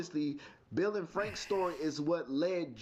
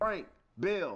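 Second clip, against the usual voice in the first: ordinary talk, nothing marked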